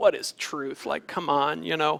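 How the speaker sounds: mock jaded, cynical, scoffing tone. Retelling the story of Pilate answering Jesus; acting out Pilate's cynical retort. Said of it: "Pilate turns pretty cynical and he says".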